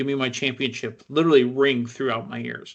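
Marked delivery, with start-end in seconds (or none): none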